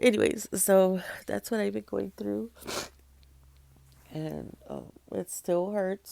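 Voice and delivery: speaking through tears, crying voice. Sharing what they've been going through, crying. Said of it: "so that's why I'm crying".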